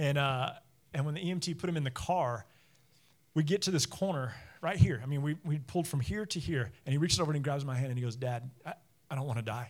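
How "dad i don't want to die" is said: mock scared, frightened-sounding voice. A father retells his injured eleven-year-old son in the car, imitating his son scared. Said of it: "he was so scared".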